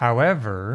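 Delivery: however with a forward tune. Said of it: "that's how you pronounce the however".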